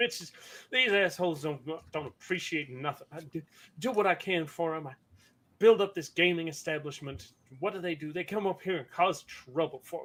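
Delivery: grumbling, muttered to oneself. A game narrator voices a man piling up bodies: muttering under his breath. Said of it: "while muttering under his breath".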